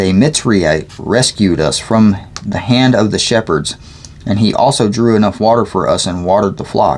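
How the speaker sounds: ordinary delivery, nothing marked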